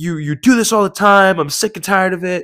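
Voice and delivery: sharp, high scolding tone. Retelling how a gym lady screamed at him, retelling a woman's yelling. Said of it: "you're literally yelling at me".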